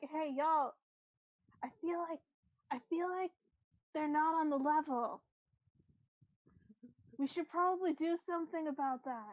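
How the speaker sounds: loud stage whisper, loud enough to carry. Voicing a character telling the crew someone is not on the level: loud whisper. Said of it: "Loud whisper".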